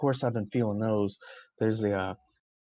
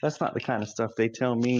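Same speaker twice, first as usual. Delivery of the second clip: plain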